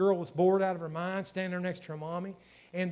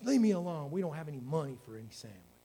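mock-irritated, annoyed acted delivery; 3 semitones lower than usual. Retelling how a mother answered her little girl; imitating an aggravated mother. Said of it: "the mother said in this aggravated voice".

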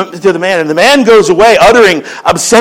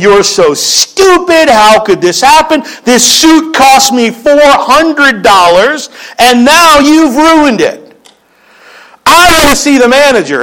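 angry shouting rant with rising pitch; 5 semitones higher than usual. Retelling a suited customer yelling at a waitress who spilled dressing on him, retelling an angry shout. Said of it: "He's shouting".

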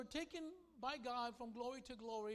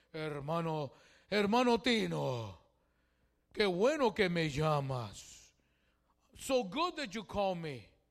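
really deep, loud voice, very slow; 6 semitones lower, 15 dB louder than usual. Calling Pastor Elias, who answers in Spanish: imitating Pastor Elias's deep voice. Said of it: "He's a real deep voice".

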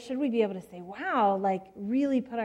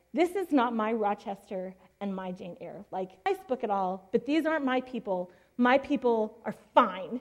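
usual speaking voice

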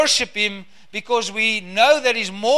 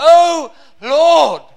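impassioned, fervent cry, high and very loud; 6 semitones higher, 9 dB louder than usual. Reading the prayer of Habakkuk aloud to listeners: acting out a cry. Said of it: "you can almost hear the cry of Habakkuk".

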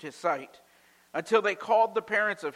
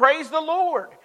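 very high, loud, exclaimed shout; 11 semitones higher, 9 dB louder than usual. Telling a story of a lady finding groceries on her porch, retelling a shout.

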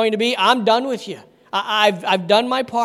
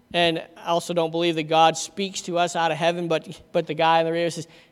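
usual speaking voice

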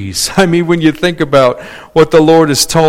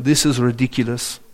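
soft put-on French accent, Parisian style; 3 semitones lower, 8 dB quieter than usual. Quoting a friend from Paris reacting to a long cereal aisle, in a French accent. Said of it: "he said to me in his French accent".

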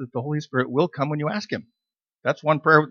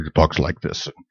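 big movie preview announcer voice, lower; 11 semitones lower, 3 dB louder than usual. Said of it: "the guy with the big voice".

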